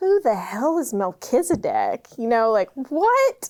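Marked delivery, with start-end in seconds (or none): 0.0-2.1 put-on tearful laughing outburst with swooping pitch. Retelling own reaction to reading a Bible verse: laughing while crying. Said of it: "I'm crying, but also just laughing".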